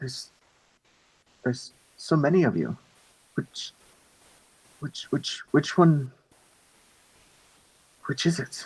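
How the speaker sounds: faint, stumbling whisper. Voicing a voice in a player's head: whispering voice in the head. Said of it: "you hear the voice in your head again whispering".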